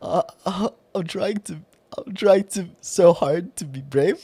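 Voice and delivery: trembling, stumbling nervous voice. Speaker retelling walking up to someone, acting out a shaking voice. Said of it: "my voice is shaking. So it's more like this".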